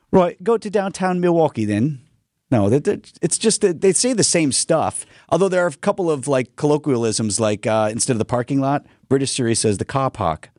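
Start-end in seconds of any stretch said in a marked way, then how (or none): 0.1-2.0 fake Cockney accent, higher pitch. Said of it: "how would that sound exactly?".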